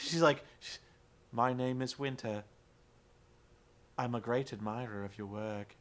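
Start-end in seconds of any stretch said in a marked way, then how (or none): 1.3-5.7 very low, inflectionless, robotic monotone drone. Imitating a woman introducing herself to Angelina, flat monotone like Winter. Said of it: "it was completely monotone, and she had no inflection to her voice".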